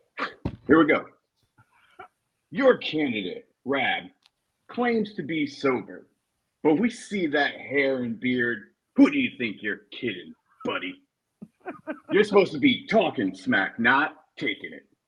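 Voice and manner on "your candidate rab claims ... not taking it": muckraking political attack ad narrator voice, higher. Roasting the others in the style of a muckraking attack ad: muckraking attack ad voice. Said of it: "muckraking attack ads, you know, like, so I'm gonna get the voice".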